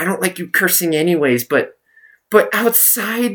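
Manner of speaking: play-acted angry, mad scolding. Retelling the speaker's mom's reaction after being texted: imitating her mad scolding. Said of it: "She was so fucking mad".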